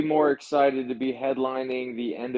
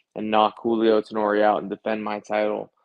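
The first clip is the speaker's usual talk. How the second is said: ordinary talk, nothing marked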